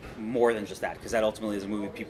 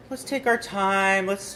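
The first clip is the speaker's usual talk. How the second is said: high, slow, laid-back big-shot director voice. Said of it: "you know, I was very like".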